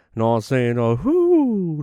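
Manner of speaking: swooping delivery with "whoo" stretched long. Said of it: "That's a [name] line".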